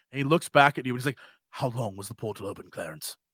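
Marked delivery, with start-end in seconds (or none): 1.5-3.2 very worried, anxious tone, lower and quieter. Voicing a character asking how long the portal was open: very worried voice. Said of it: "He sounds very worried".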